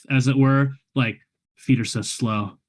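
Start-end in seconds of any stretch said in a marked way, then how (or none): 1.6-2.5 low, muttered grumble under the breath. Voicing a character walking through woods: grumbling under breath. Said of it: "grumbling under my breath".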